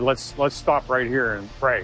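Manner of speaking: ordinary talk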